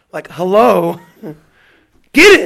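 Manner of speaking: very loud screamed outburst, pitch swinging wildly. Acting out Rabbi Harris's answer about which Masechta is being learned, imitating Rabbi Harris screaming. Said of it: "Like Rabbi Harris's screams".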